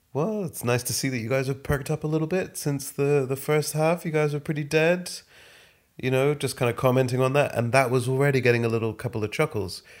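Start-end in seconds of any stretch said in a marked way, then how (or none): 0.2-5.1 cool, calm, patronising, pitched-up ribbing. Retelling a comedy set, talking to the audience: imitating own calm condescending tone. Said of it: "in a very calm and slightly cunty, condescending tone".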